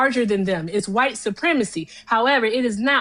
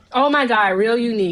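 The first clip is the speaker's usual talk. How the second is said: acted sarcastic, mocking delivery. Imitating the other speaker's remark back at him: imitating a sarcastic remark. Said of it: "you can be sarcastic".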